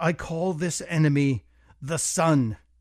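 ordinary talk

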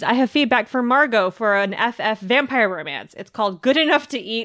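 ordinary talk

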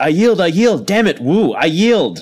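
hollering, pitched high. Player voicing their own character during a fight, shouting. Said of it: "Eventually you hear me shouting".

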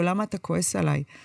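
ordinary talk

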